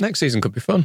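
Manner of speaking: forced, unconvinced optimism, voice jumping up an octave. Saying next season could be fun, voice going up an octave. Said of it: "you went up an octave then".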